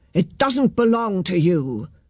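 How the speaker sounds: plain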